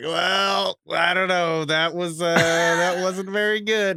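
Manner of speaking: very slow, noncommittal, drawn out, hedging every word. Imagining a commentator's mild reaction to a bad call: imitating Aikman. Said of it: "Aikman would have been like".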